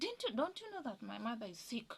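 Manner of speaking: shouting. Recalling being caned, the speaker repeats what they shouted: retelling a shout. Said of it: "and I shouted like".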